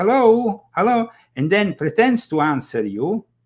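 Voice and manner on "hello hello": high, loud robotic woman's voice. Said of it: "this female voice answers, says".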